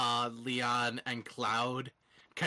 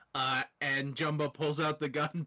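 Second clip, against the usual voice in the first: usual speaking voice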